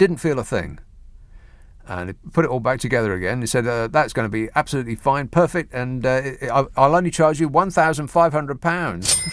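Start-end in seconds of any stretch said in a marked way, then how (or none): none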